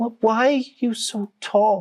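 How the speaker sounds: weak frail voice. Voicing a crying young girl who looks up: frail voice. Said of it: "before a frail voice goes".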